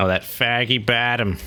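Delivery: put-on Boston accent, slow, high, drawn out. Playing Fallout Three and commenting on a place: put-on Boston accent. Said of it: "I don't know why I'm doing a Boston accent".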